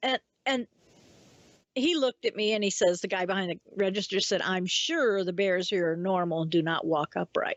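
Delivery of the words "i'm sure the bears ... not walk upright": put-on dry, flat, expressionless deadpan delivery. Retelling the register clerk's answer about upright-walking bears, imitating a deadpan reply. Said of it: "he was just as deadpan faced as could be".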